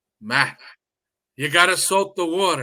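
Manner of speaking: terrible, put-on Italian accent. Retelling what a visiting Barilla chef told him while making pasta, terrible Italian accent. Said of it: "terrible Italian accent".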